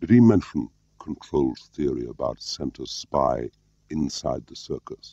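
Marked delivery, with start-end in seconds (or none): none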